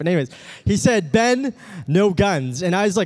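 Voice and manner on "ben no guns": horrible, botched, bad put-on Indian accent. Retelling what a man told him, the speaker does a horrible indian accent. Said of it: "That was actually a horrible Indian accent".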